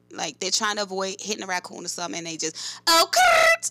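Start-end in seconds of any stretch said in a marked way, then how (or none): 2.9-3.7 very high, loud, swerving shriek. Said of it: "sound like a person about to get into a car accident".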